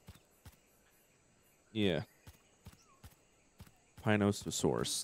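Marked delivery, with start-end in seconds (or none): 4.0-5.0 Pinososaurus stated decisively with a firm falling tune. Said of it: "That's how we're gonna say it".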